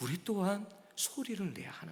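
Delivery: quiet, unvoiced whisper.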